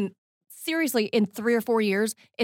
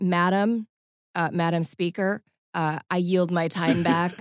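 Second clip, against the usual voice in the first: dry, slow, monotone formal address; 5 semitones lower than usual. Comparing Congress to Parliament, imitating a dry congressional speech. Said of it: "it's all dry".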